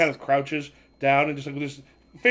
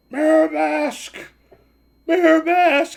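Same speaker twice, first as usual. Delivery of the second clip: very high, very slow, drawn-out cracking villain scream; 13 semitones higher, 5 dB louder than usual. Voicing the villain standing in front of the car: villain screaming, voice cracking. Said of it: "He stood in front and just screamed".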